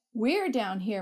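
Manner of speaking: ordinary talk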